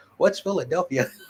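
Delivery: mock joking sarcasm with a feigned clueless tone. Retelling a coworker's answer to a question: imitating a sarcastic joke. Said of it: "as a sarcastic joke".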